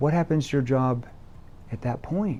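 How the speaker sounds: concerned, worried, caring tone. Asking a prospect about the consequences of doing nothing, concerned tone. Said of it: "notice how I ended it. ... concern tone".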